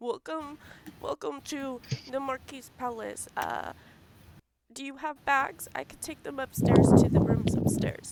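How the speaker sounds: put-on high-pitched elderly old man voice. Voicing an elderly man greeting arriving guests: elderly man voice. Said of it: "this elderly man, he comes up to you and he goes".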